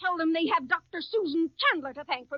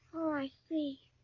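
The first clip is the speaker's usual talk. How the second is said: flat, unexcited, quieter; 7 dB quieter than usual. Replying to news that a couple got married right after the game: unexcited, flat reply. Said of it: "You don't sound very excited about it".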